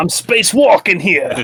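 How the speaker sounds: put-on Jersey-accented delivery. Voicing Jebidiah for the episode: Jebidiah's New Jersey accent. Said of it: "Space, New Jersey".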